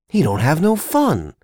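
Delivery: insisting. A narrator reads Carlson arguing with Candy, insisting. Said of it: "Carlson insisted".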